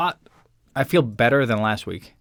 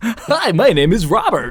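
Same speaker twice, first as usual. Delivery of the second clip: very high, loud, sing-song, swooping mocking voice; 9 semitones higher, 6 dB louder than usual. Introducing the podcast, doing a mock impression of Robert. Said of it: "Is that what I sound like to you?".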